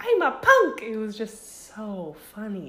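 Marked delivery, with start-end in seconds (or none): 0.0-0.8 very high, tiny, squeaky little voice. Quoting what she used to say, in a teeny squeaky little voice. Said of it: "In her teeny little squeaky voice".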